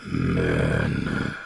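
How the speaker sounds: very low, rough, gruff rumbling voice. Telling a story, voicing the creature on the road in a gruff rumbling voice. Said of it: "in a sort of very like gruff, like rumbling voice".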